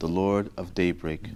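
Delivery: ordinary delivery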